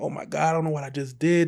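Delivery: play-acted wailing, crying out through tears. Retelling bursting into a friend's house after fleeing: imitating own past wailing. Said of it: "I just fall on the floor wailing, just crying".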